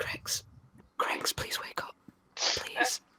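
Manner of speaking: whispering. A player's character pleading with an unconscious character, whispering. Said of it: "Just like whispering".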